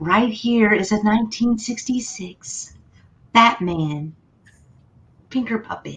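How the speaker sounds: soft, gentle ASMR-style whisper. Speaker presenting a collectible after offering to switch voices, in an ASMR voice. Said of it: "I will use my A S M R voice".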